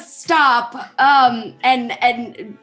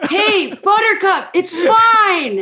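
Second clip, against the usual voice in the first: mock yell, much higher pitched, slower; 6 semitones higher than usual. Retelling a story, the speaker acts out a man yelling at a horse: retelling a yell at a horse. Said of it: "And he's yelling at the horse".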